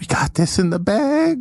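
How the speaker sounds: very high, slow stage half-whisper. Voicing a character in a courtroom scene who leans to the snail: half-whispering. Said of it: "He whispers to the snail".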